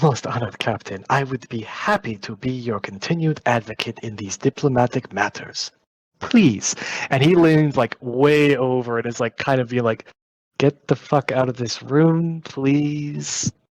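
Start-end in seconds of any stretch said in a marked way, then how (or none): 0.0-6.7 oily, fawning, obsequious, deferential tone. Hirota slips in through the door and addresses the captain, obsequious Hirota voice. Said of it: "being a little bit obsequious".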